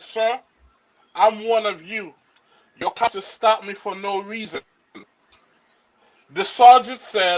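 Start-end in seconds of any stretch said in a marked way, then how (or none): none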